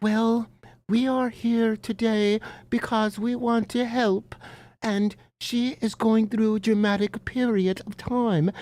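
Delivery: gentle, nice, calm, soothing, reassuring therapist voice. Speaker mimicking how hate channels talk like therapists, mock calm, soothing voice. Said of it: "They speak in a very calm, nice voice ... and they talk like this".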